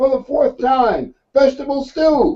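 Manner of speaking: irritated, annoyed shout, very high. Telling a joke, the wife answers the repeated question: imitating a woman yelling back. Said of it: "she yells back".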